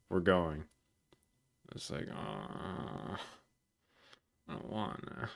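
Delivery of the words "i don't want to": acted-out depressed, groggy, given-up whisper, very slow. Retelling their reply to a call urging them to get up, mock-depressed just-woke-up voice. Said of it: "add that with like depressed and you're you're like ready to give up".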